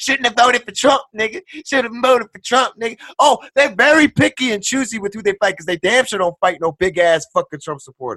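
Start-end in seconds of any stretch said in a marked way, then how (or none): 0.0-3.0 street-tough, swaggering gangster talk, pitched up. Retelling what attackers in a video said while beating someone: imitating gangster talk. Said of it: "talking all gangster".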